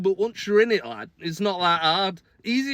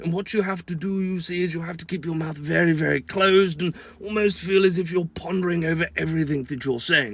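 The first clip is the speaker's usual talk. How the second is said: put-on British royal-family accent; 3 semitones lower than usual. Explaining british accents to americans, demonstrating one: royal family british accent. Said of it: "the actual British accent is that of, well, the royal family".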